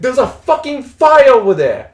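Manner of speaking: emphatic stress on "fucking", loud and high.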